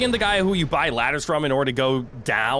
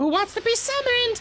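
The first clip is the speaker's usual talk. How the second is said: squeaked out, very high-pitched voice. Speaker voices a call asking who wants to be summoned, in a high-pitched Elmo-like voice. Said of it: "when I just use a high-pitched voice".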